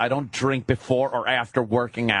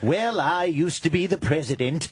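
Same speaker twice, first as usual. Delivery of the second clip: bad, failed impression, pitched higher; 3 semitones higher than usual. Doing a deliberately broken impression: failed impression. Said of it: "kept trying to do impressions but couldn't do them".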